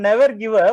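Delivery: normal talking voice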